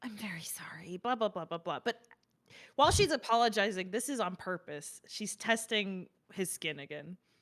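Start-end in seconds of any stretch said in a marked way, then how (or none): 0.0-1.8 barely-there, very quiet hushed whisper. Narrating a scene, voicing a character apologizing to her father: whisper. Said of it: "just kind of whisper".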